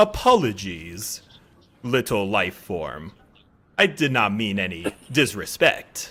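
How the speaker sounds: modulated robotic droid voice, low and soft. Playing an insectoid protocol droid raising its hand in resignation, modulated droid voice. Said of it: "it says in a modulated voice".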